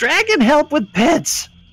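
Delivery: very high screamed voice. Voicing another kobold calling to the dragon: kobold screaming for help. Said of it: "as another one screams".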